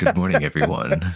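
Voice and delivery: showy, put-on broadcast announcer voice. Co-host greeting everyone at the start of a show, put-on announcer voice. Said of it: "That was my uh, announcer voice".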